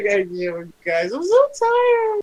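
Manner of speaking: acted tipsy, boozy drunk voice. Retelling what a drunk Aria said at the back of the room, imitating drunk Aria. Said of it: "She's like".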